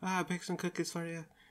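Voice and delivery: gentle, very high Scottish or Irish voice. Retelling a woman handing over cookies, soft-spoken scottish or irish accent. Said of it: "she's like a kind of soft-spoken, whatever, Scottish, Irish".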